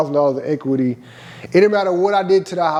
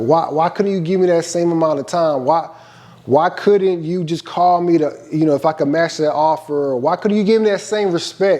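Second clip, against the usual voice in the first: ordinary talk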